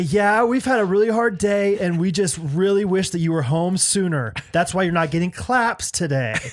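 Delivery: put-on pointed, guilt-tripping, passive-aggressive tone. Acting out talking through a baby to the dad: mock passive-aggressive. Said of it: "way more passive aggressive with it".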